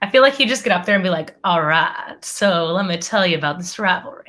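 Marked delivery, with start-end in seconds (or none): 1.4-4.1 soothing, gentle voice. Imitating Matthew McConaughey giving a pep talk before the game: soothing Matthew McConaughey voice. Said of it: "The soothing voice of Matthew McConaughey".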